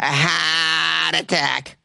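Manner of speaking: Bostonian accent. Demonstrating a phrase that sounds great with a boston accent, in a boston accent. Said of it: "which is a great word to say with a Boston accent".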